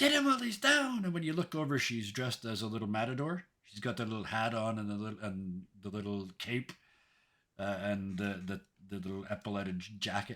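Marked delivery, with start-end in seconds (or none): 0.0-1.0 yelling out, very high pitched. Voicing a character calling to attack a downed foe: yelling out. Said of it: "yells out".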